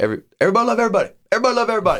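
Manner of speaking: put-on very high, pleading scream. Quote a man in a movie trying to calm people down, imitating Will Ferrell screaming. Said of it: "and just screaming at everybody".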